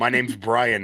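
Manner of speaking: put-on Indian accent. Describing a scam phone call, the speaker imitates the caller: indian accent. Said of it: "somebody with an Indian accent and they go".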